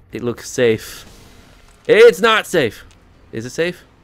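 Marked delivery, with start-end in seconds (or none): 1.8-3.8 loud, high-pitched, frantic, panicked voice. A streamer deciding whether a spot in the game is safe, panicked. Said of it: "I panicked".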